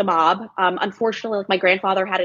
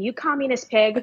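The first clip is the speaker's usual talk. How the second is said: put-on, half-hearted, mild scolding shout; 4 semitones higher than usual. Admitting to now shouting the same thing: imitating own screaming. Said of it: "now in my thirties screaming".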